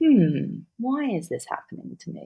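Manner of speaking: pondering sing-song tone. Speaker contrasting two ways to ask the same question, in a curious, pondering tone. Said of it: "to become the philosopher".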